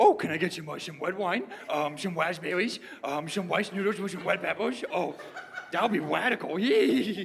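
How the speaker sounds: bad cartoon dog voice, every r swapped for w. Playing a server whose r's come out wrong, doing a bad Scooby-Doo impression. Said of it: "That was a bad impression".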